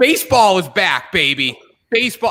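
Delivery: giddy, squeaky, swooping excited cry with voice crack. Host checking the date with the audience, excited, voice squeaking. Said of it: "I think my voice just squeaked there".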